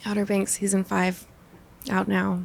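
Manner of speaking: let down, disappointed, deflated delivery. Saying a show promo line in different moods, now disappointed.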